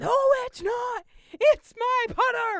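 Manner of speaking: very high, very loud, shrill, furious, insistent screaming. Recounting an argument over a golf bag, retelling the man screaming. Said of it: "he's screaming at me".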